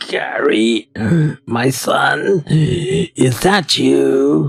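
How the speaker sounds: rasping, scratchy-throated voice. Voicing a man who takes the listener for his son, in a scratchy voice. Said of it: "He starts talking with a scratchy voice".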